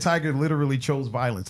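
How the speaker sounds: ordinary talk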